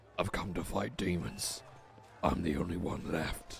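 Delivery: low, raspy, edgy rogue voice drifting British. Playing an edgy rogue in a game, answering a question: low raspy edgy rogue voice. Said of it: "So we're playing as this edgy rogue named [name]. ... I'm going to do a low raspy voice that doesn't take a lot on my throat. ... Why does it easily like go British? Who are you then? British".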